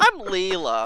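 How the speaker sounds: loud, funny cartoon voice. Performing a requested impression for the others: Leela from Futurama impression. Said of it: "this really funny impression of Leela from Futurama".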